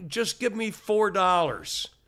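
slow, high, threatening, spelled out deliberately.

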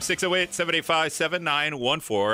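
fast, hurried speech. Giving the call-in phone number on air: saying the number fast. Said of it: "I always do that so fast".

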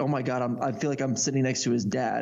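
usual speaking voice

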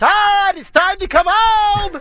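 very high-pitched, drawn-out yell. Recalling a buddy's mom calling him home, imitating her high-pitched yell. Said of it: "she had the most high-pitched voice".

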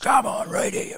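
very raspy, rasping, worn-sounding voice. Retell a local floor guy calling from his mountain bike, in Damien Davis's real raspy voice. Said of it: "He's got this real raspy voice from all the flooring chemicals".

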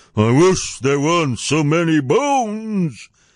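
grumbling giant voice, slow, grumpy, "bones" drawn out. Jack hears the giant mutter from high above, in grumpy tones. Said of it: "and this in grumpy tones".

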